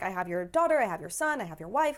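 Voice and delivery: ordinary talk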